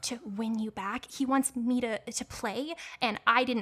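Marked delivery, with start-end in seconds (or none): 0.0-1.1 speaking in a whisper, quieter. Leaning in while playing a character, finishing a sentence: whispering. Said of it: "I'm, like, whispering".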